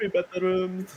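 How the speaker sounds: high-pitched mocking voice. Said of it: "make fun of people's voices".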